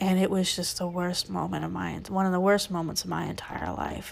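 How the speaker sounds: normal talking voice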